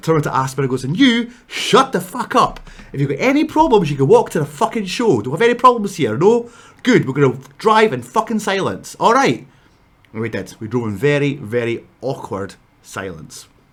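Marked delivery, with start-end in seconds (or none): 0.8-9.5 mock angry, heated, loud, raised outburst. Retelling slamming the brakes on during an argument: imitating own heated outburst. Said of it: "'cause I got really heated".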